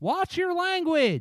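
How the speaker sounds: very high, loud yell. Voicing a character on a roof, calling down to an enemy: yelling from the roof. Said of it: "I'm gonna yell from the top of the roof".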